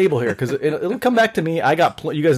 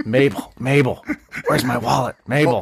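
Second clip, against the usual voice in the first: pretend whisper, still full-voiced; 3 semitones lower than usual. Imitating a man being described to the others, mock whisper in full voice. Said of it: "pretending to whisper, but it's still like a real full voice".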